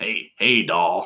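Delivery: voice like a cigarette smoker's. Asked for a smoker impression, speaker tries one, in a cigarette smoker voice. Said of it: "That's like how a smoker would talk".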